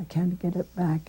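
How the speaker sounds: ordinary talk, nothing marked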